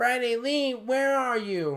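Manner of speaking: hollering, very high, shrill yell. Retelling a scene where the grandma yells from the kitchen, retelling grandma's yell.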